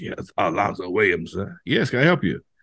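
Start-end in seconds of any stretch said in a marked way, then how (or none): 0.0-1.3 very low, rasping voice. Retelling a morning phone call, speaker imitates the caller's real raspy voice. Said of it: "real raspy voice".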